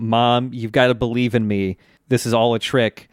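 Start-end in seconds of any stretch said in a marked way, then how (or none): none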